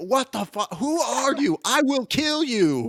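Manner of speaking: seething, enraged, high, deliberate, words spaced out. A voice over a scrying stone answers a stranger: angry. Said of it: "getting more and more angry".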